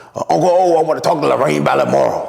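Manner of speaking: heavy rasp in the throat, raspy and creaky. Retelling what E A asked him: imitating E A's raspy voice. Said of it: "E A got that raspy ass voice".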